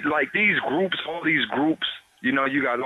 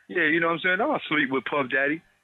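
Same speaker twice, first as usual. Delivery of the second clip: mock insincere, sarcastic, joking, tongue-in-cheek delivery. Retelling a line from an interview he gave: imitating his own sarcastic tone. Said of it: "I made a sarcastic interview where I was like".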